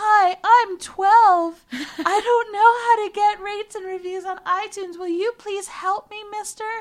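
put-on shrill, very high, loud voice of a twelve-year-old. Podcast host asking listeners for iTunes reviews, in a young child voice. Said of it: "Did she use a younger voice?".

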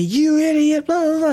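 very high, abusive, shrieking scream. Recounting a man who followed them home and screamed at them: retelling a man's screaming. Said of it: "he's screaming at me".

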